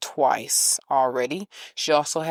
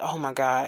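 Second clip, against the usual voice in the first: put-on nervous voice; 3 dB quieter than usual. Retelling his reaction on hearing about the lump: imitating someone nervous. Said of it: "he got very nervous and he was like".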